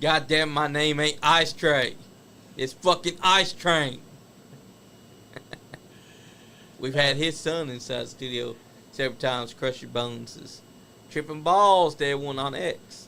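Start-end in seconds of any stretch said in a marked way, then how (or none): 0.0-4.0 loud, furious, angry yell. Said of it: "turns around and yells at him".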